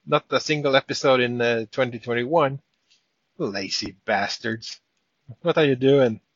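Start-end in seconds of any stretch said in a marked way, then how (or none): 3.3-6.1 accusing, scolding critic tone. Imitating listeners accusing the hosts of being lazy: imitating an accuser. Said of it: "we could be accused of".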